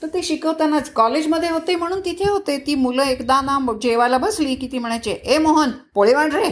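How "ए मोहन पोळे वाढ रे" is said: high-pitched, rude shouted delivery. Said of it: "ओरडून बोलू नये".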